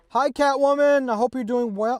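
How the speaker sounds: very high, loud, eager, excited yell. Speaker greets someone into the mic, yelling. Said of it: "why am I yelling so much?".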